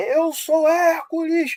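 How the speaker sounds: mock very high, adrenaline-fuelled roaring shout. Telling a behind-the-scenes story about a scene: imitating The Rock shouting. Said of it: "ele grita".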